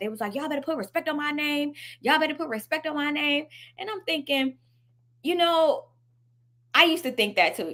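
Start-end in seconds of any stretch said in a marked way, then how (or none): 0.4-3.5 heated, angry, ranting, going off. Retelling someone seen going off in a video: imitating someone going off. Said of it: "they were going off".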